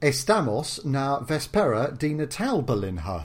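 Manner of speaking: Portuguese read slowly in very English accent. Asked for a line, reading Portuguese with a very English accent. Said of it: "reading Portuguese in an incredibly English way".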